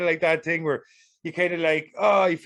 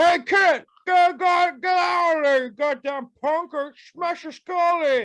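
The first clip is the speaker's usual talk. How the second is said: very high, slow, grumpy, chewing-mouthed grouch voice; 13 semitones higher, 4 dB louder than usual. Acting out a public works worker yelling at a kid: tobacco-chewing public works worker voice. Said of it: "He's definitely chewing some tobacco".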